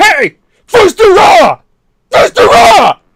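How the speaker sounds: angry bellow, very loud, very high, shrill, drawn-out. Acting out how one might yell angrily at the Dovahkiin: yelling at the Dovahkiin. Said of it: "Just look at him and go".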